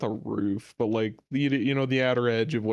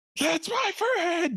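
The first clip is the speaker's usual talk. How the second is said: loud cheering shout, higher. Voicing a character cheering for a friend from the sidelines: loud cheering. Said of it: "he's cheering so loudly".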